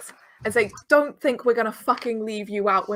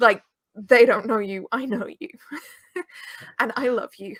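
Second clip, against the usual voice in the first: quite fierce, fervent, intense tone. A character speaks to two others at the same time, quite fierce. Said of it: "says quite fiercely".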